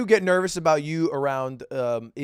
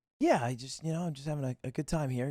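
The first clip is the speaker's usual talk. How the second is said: put-on shy streamer voice, quieter; 8 dB quieter than usual. Playing the streamer in a red carpet interview skit: Sykkuno impression. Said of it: "I got Sykkuno here".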